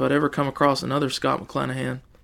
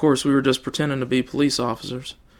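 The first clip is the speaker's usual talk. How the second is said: plain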